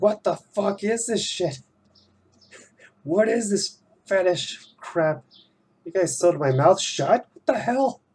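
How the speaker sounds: put-on very high, outraged, panicking rant. Voicing a drawn character whose mouth is sewn shut: freaking out. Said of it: "freaking out. He's like".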